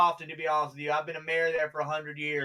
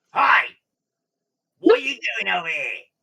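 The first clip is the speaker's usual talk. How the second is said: very loud, high rat-creature voice; 5 semitones higher, 10 dB louder than usual. Describing a rat guy who speaks back to you, acting his greeting in rat voice. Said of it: "In rat, he speaks back to you".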